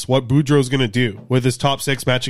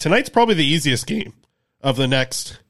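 cracking, breaking voice. Going over the upcoming schedule with a co-host, voice cracking. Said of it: "my voice cracked".

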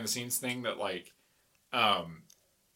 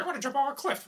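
bad, very high-pitched put-on voice; 12 semitones higher than usual. Retelling a stressed breakdown: George Lucas impression. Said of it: "my terrible George Lucas impression".

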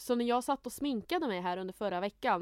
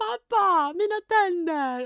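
distraught, high, loud, panicking wail; 9 semitones higher, 10 dB louder than usual. Retelling phoning their dad in a panic, retelling a distraught cry. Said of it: "Och blev helt förstörd".

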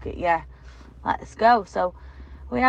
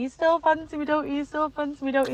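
put-on high, tearful pleading through sobs; 8 semitones higher than usual. Retelling getting out of the shower and asking him: imitating own crying. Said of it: "crying my eyes out".

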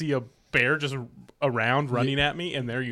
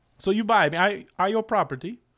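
put-on high-pitched Russian-accented boy voice; 6 semitones higher than usual. Playing an adopted eight-year-old Russian kid thanking his new father: playing a Russian kid. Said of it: "he's an eight-year-old Russian kid".

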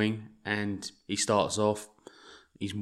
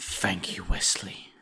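breathy, slow, menacing villain voice. After discussing how the actor looks, the speaker tries a Kingpin impression. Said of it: "That's my Kingpin impression".

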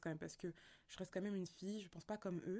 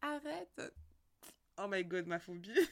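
put-on giggling, louder; 6 dB louder than usual. Acting out how a girl reacts to a guy's little joke, acting out giggling reaction. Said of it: "tu rigoles en mode".

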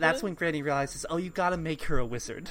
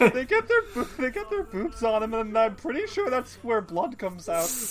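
put-on dumb teen voice, much higher pitch; 9 semitones higher than usual. Playing Trina, recounting what Mr. Treadles said, in a dumb teen voice. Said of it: "I just want to do a dumb teen voice".

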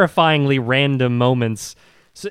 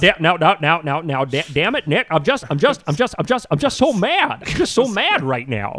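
put-on movie-star voice, mock-angry. Joking that you never feel anger from him even when he yells, mock-angry Jimmy Stewart voice. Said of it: "listen to Jimmy Stewart talk and feel anger".

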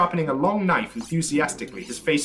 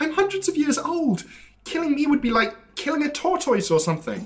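very high, whimpering voice; 13 semitones higher than usual. A captive begs the threatening captor for mercy, whimpering. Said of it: "Stop whimpering".

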